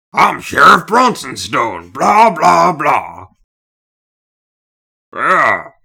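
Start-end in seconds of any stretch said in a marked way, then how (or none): 0.2-3.3 put-on very loud, booming big old bear voice. A guest tries a voice he says comes out like a bear: Sheriff Bronsonstone impression. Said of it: "I just end up sounding like a big old bear".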